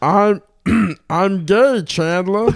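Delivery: very high, loud, slow, drawn-out voice. Trying again after advice to use the back of the throat: Ray Romano impression. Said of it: "that's supposed to be Ray Romano?".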